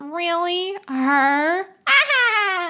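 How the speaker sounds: put-on loud, high, catty mean-girl sneer, drawn-out ah. Acting out a mean classmate mocking a talent show entrant: acting mean. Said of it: "Or I could be mean".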